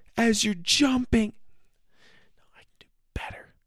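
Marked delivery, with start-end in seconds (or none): 0.2-1.4 pitched way up, hollering like a TV host. Imitating Fear Factor's Joe Rogan: Joe Rogan impression. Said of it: "let me do it better, Joe Rogan".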